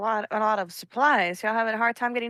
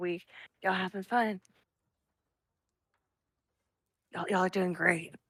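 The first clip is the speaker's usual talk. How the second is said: soft, hushed half-whisper in a character voice; 4 semitones lower, 8 dB quieter than usual. Half-whispering in character to the others at a bar table: half-whispering in character. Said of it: "I whisper at Loretta".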